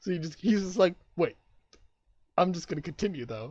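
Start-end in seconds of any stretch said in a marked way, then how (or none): 1.2-3.5 mock deadpan, unfazed, carrying straight on. Retelling how someone ignored a snide remark: imitating a deadpan reply. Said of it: "he deadpans ignore".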